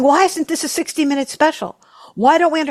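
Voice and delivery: mild, contained scream, kept small like a mild yell. Speaker recalling hearing a news story, retelling a scream.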